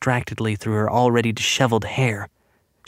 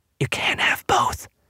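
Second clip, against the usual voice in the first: soft, hushed whisper. A woman who fears being killed tells Bellamy, whispering. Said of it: "she whispered".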